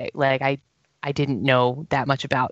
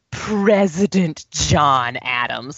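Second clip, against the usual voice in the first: slow, every consonant spat out insultingly. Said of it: "he punctuates every consonant like an insult".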